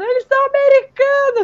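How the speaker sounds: mock shrill cry, pitched way up. Speaker recounts a TV episode scene, retelling a character's shout. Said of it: "Aí ela já sai gritando".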